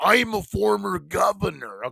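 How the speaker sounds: slow, rough drawl. Riffing on a caller said to be with Jesse Ventura: Jesse Ventura impression. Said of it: "I have to start it like that".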